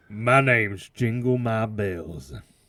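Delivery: full, all-in put-on Southern accent. A podcast co-host introduces herself in a full made-up Southern accent. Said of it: "went like full Southern and made it up".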